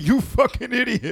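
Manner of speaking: mock scorn, shrill, very high, very loud jeer. Retelling laughing in a woman's face at a barbecue: retelling laughing in someone's face. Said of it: "I'm laughing in her face like".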